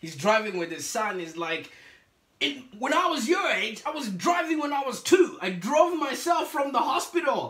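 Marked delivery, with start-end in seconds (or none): 2.8-7.5 put-on, laid-on Italian accent, pitched up. Retelling a father talking to his son while driving, in an Italian accent. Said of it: "he says it in an Italian sort of accent".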